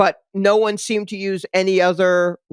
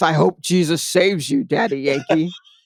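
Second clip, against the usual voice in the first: grave, ominous, foreboding, doom-laden delivery; 3 semitones lower than usual. Repeating the other speaker's line back to them, imitating an ominous tone. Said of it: "That sounded so ominous".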